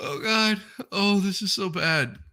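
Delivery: laughing so hard it becomes tearful. Watching a clip sent by members, laughing to tears. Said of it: "I'm in tears right now".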